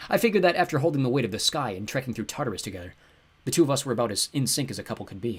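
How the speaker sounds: ordinary delivery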